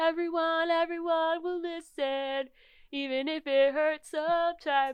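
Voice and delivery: put-on very high, full-throated, shrill child-like scream. Retelling a kid yelling in a concert line: imitating a kid screaming. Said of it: "And he was just screaming".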